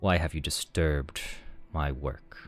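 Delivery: quiet, very flat, toneless drone with no inflection. A game master voices a creature speaking to the spellcasters, very monotone voice. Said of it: "in a very monotone voice".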